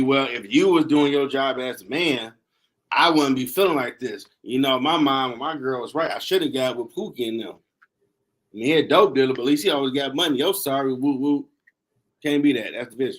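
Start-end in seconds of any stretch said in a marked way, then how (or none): none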